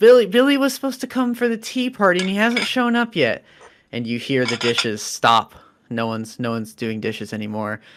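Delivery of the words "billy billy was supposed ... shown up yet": put-on tearful crying little-girl voice, very high. A narrator voices a little girl in tears calling out, in a crying little girl voice. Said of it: "she cries out for her mom".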